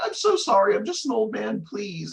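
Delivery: very high, groveling, pleading voice. Retelling a game ending, the defeated villain bowing repeatedly: imitating Wily begging. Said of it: "bowing repeatedly. He's like".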